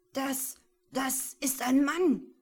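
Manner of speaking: high, loud, fearful, frightened stammer. Paul, finding a body in the snow with Michael, stammering fearfully. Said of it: "stotterte Paul ängstlich".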